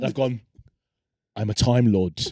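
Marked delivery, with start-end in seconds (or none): 1.4-2.2 put-on, really intense delivery, lower pitch. Retelling telling a friend in a pub about being a time lord: retelling saying it really intensely. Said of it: "really intensely".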